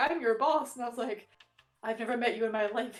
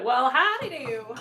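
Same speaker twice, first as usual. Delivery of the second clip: exaggerated put-on Southern US accent, higher, slower; 2 semitones higher than usual. Describing slipping while attempting an American accent: super Southern accent. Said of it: "I always go like super super southern".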